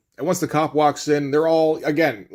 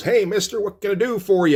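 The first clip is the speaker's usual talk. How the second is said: cheery, happy-go-lucky small-town voice, pitched up; 6 semitones higher than usual. Retelling a story, the speaker voices the small-town gas station attendant greeting a driver: imitating a happy-go-lucky gas attendant. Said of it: "small town gas station attendant".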